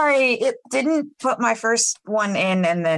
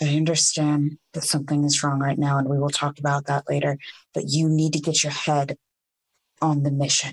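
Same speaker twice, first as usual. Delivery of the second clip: whispering, much faster; 6 semitones lower than usual. In a role-play, a character goes over to another mid-mission, whispering. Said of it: "whisper to him".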